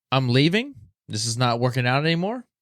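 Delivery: ordinary delivery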